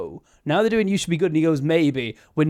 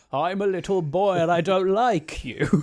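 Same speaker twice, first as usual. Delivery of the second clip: put-on kid doing a fifty-year-old man's voice; 2 semitones higher than usual. Describing a kid whose voice turns into a grown man's, in a fifty-year-old man voice. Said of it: "the voice will just turn into that of a fifty-year-old man".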